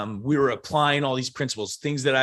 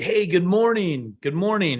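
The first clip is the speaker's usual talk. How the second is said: loud, high, booming, cheerful voice; 6 semitones higher, 3 dB louder than usual. Describing a loud greeting style, demonstrating a loud morning greeting. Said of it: "the level of volume that's being portrayed".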